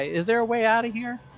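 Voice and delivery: high-pitched, far-carrying calling yell. Playing a character who calls out to a prisoner: yelling in character. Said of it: "yell to the guy".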